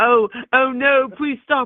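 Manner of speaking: high, slow, whiny mock pleading voice.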